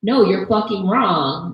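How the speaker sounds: acted aggressive, hostile, blunt cursing retort. Describing how some people rebut an argument, act out the rude reply: mock-aggressive retort. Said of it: "in a way that was really aggressive".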